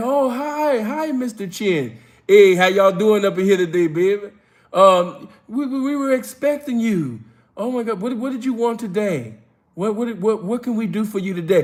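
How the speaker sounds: eager, welcoming luxury store clerk voice. Retelling how store staff greet a known big spender: imitating Louis store staff. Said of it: "They're like".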